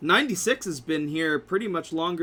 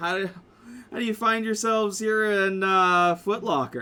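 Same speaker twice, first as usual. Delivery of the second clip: cocky little character voice; 3 semitones higher than usual. Voicing a Lego man greeting the players: Tony, cocky Lego man character. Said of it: "and says".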